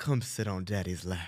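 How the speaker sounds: put-on deadpan, very low, slow, not joking. Retelling what Nick said at the bar, imitating Nick, dead serious. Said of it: "And dead serious, Nick goes".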